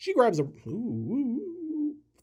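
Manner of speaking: voice cracking, high, drawn-out "oohs". Narrating a film while reading a teleprompter, voice cracking. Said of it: "voice is cracking".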